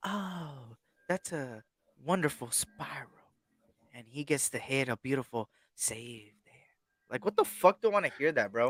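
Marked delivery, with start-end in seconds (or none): 0.0-6.5 hushed, soft, slow cricket commentator voice. Mocking how cricket commentators talk: imitating soft-spoken cricket commentator. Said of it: "This is how the commentators are".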